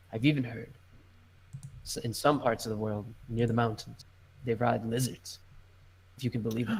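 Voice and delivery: speaking low. Narrator voicing a man answering the listeners' question: lowered voice. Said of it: "he like lowers his voice a little bit".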